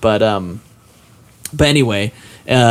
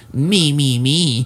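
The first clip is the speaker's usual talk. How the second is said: put-on smug, pedantic, know-it-all teen voice, droning. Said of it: "I just talked like that all the time".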